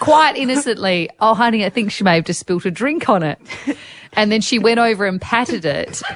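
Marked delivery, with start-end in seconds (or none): none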